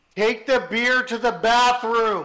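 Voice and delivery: very loud, high-pitched shouted yell. Playing a character giving an order over comms: yelling into comms. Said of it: "I'm yelling in my comms".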